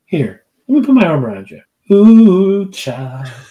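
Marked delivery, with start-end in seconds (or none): 0.1-1.6 playful fake comforting tone. Recalling high school, jokingly comforting a friend who isn't really hurting: mock-comforting a friend. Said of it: "jokingly like comfort a friend".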